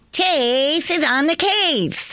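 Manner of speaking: very high pitched, bursting with excitement. Retake of a catchphrase after being asked for more excitement, more excited. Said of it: "But now more excitement".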